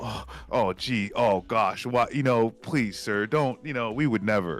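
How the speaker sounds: mock flustered, pleading tone. Mocking how spokespeople respond to questions: imitating flustered American spokespeople. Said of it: "they'll get all".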